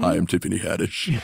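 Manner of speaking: low, soft, creaky, rough voice. Imitating someone sat near on a flight home: low Tiffany Haddish voice. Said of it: "She's got that sort of, uh, low voice".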